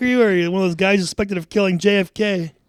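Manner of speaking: high, loud, mocking voice.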